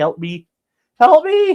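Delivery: very high, frantic, panicked, pleading dog voice. Voicing the scared dog's thoughts to chat: voicing a panicking dog. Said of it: "She's licking 'cause she's panicking".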